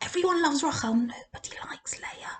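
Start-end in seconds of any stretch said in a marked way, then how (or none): 0.9-2.3 soft, secretive whispered aside. Confiding to listeners, worried she can hear, whispering. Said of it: "I'm just whispering".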